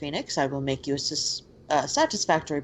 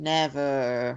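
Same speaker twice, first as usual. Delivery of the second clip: mock flat, uncaring, indifferent deadpan delivery. Retelling how someone answered, imitating a deadpan reply. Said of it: "in a deadpanned, like not even cared".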